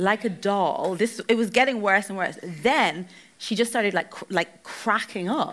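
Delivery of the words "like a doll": put-on thick, strong Polish accent throughout. Retelling what a woman working in an airport bar said: strong Polish accent. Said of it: "she said to me in a strong Polish accent".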